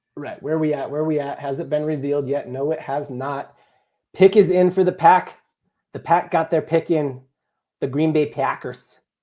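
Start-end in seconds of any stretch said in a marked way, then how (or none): 4.2-9.0 put-on Midwest accent, kept subtle. Announcing the green bay packers made their pick: put-on midwest accent. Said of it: "I'm really good at the Midwest accent".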